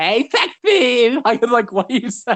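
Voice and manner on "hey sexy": put-on lisping, flirtatious woman voice, higher. Speaker who has a lisp mocks a woman with a lisp trying to be attractive. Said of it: "a woman with a lisp is like trying to be all attractive".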